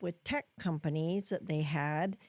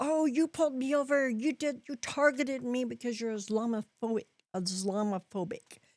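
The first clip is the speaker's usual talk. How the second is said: put-on scream, higher pitch; 5 semitones higher than usual. Retelling someone pulled over complaining: imitating someone screaming. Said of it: "they start screaming".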